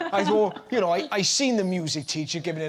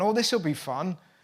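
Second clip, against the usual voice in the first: ordinary talk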